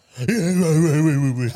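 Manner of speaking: loud, put-on jeering, needling, taunting voice. Retelling how she mimics him now: imitating her mocking him. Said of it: "This is what she does now. She goes".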